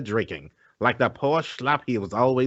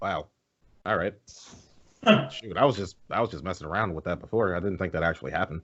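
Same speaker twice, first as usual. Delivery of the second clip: usual speaking voice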